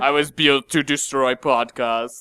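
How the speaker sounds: bad put-on Austrian-accented robot voice. Joking about being a podcast robot: terrible Arnold Schwarzenegger impression. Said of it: "Terrible Arnold".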